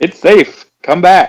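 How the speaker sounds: far-carrying, booming yell, pitched way up. In a tabletop game, a player's character yells to a fleeing group: yelling. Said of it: "I'm just yelling".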